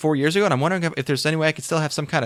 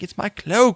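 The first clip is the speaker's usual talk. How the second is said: sudden, high, put-on British accent; 5 semitones higher than usual. Retelling a filmed exchange, the speaker quotes a woman in a random British accent. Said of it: "she has a British accent for no reason".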